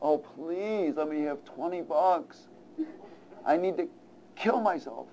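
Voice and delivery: soft, imploring, begging tone. Illustrating a point, acting out a drug addict on his knees, imitating someone begging. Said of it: "getting on his knees and begging".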